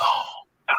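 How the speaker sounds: hushed, somber whisper.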